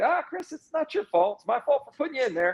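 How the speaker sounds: very high, swooping, heavily sarcastic consoling tone. Retelling what the coach said after a mistake: Steve Spurrier impression. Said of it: "everybody kinda has their own Spurrier impression".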